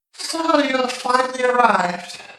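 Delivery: very high, warped, distant feminine voice. Narrating a game, voicing a voice that speaks up to players, warped distant feminine voice. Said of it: "a feminine voice, slowly speak up, though they sound warped, distant".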